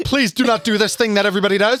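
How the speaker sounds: put-on aggressive, pushy voice. Acting out the friend's line to a tour group: imitating an aggressive plea. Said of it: "aggressively just like".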